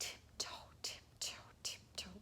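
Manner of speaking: quiet, hushed, creeping whisper. Demonstrating how to read a story aloud, whispering. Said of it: "You can kind of whisper through this bit".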